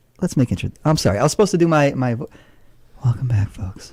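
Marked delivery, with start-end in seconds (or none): 3.0-3.9 low, soft public radio announcer delivery. Host opening the weekly show's introductions, in an NPR radio voice. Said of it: "Your N P R voice".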